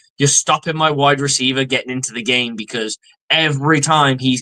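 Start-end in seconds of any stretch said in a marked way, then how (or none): none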